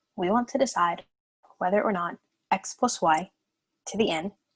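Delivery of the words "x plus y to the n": x plus y grouped, slow, short pause after y. Reading a math expression aloud: short pause after y. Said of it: "I said this as x plus y, and then had a little pause there that said to the nth power".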